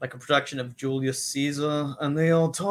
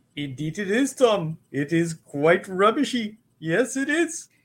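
Hindi-inflected Indian English accent, pitched up; 6 semitones higher than usual. Ranking accents, the speaker demonstrates a Hindi Indian accent. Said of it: "And that's the Hindi".

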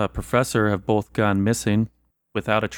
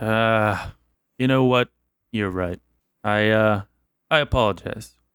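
spoken with a heavy sigh. A character gives in to another's appeal, with a heavy sigh. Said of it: "With a heavy sigh".

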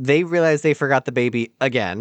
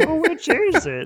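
put-on old farmer voice, higher. Retelling a movie scene, a confused bystander questions the robber: imitating an old farmer man. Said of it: "this old, old farmer man is like".

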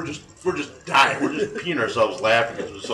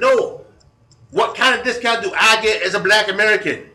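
high, loud mock vernacular dialect voice.

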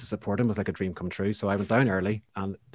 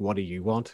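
put-on disdainful voice. Retelling how the manager answered the door: imitating Johnny Green's disdain. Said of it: "he looked at me with disdain".

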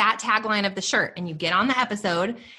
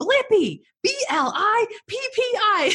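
mock-angry yell, much higher pitch; 14 semitones higher than usual. Retelling how he yelled at the phone's assistant, mock-angry yelling. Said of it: "he gets so mad and he's yelling at her".

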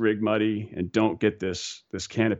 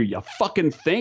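mock hollered yell, raised, high-pitched, up close; 7 semitones higher than usual. Retelling the other jumper yelling back in the ear: imitating someone yelling. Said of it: "yells in my ear".

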